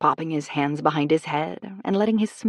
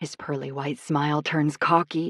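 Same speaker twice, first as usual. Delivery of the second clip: ordinary delivery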